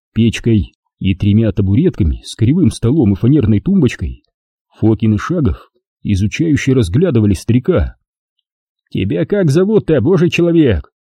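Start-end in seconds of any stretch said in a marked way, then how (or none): 8.9-10.8 high, derisive, needling, mocking tone. A man questions an old man in his small house, asking mockingly. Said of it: "насмешливо спросил Фокин".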